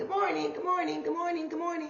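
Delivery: mock bright, bubbly, perky cheer, very high. Describing being a morning person, act out a mock-perky morning greeting. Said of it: "I'm just so perky in the morning".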